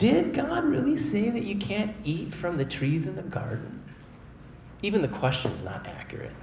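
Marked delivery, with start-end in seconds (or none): 0.0-3.8 smooth, very high-pitched voice. Retelling the garden story, the devil speaks to Eve in a smooth voice. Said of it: "in a smooth voice".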